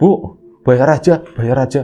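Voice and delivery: scared, fearful, pleading tone. Retelling a frightened man telling a woman to take the money: acting out frightened pleading. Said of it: "Mas Arfan takut".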